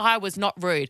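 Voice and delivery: ordinary talk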